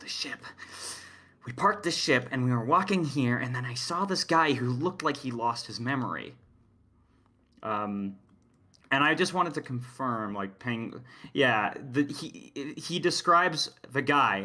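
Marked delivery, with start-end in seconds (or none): 0.0-6.3 voice dropped down low, hushed. Acting out his explanation after they parked, retelling in a lowered voice. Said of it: "he lowers his voice".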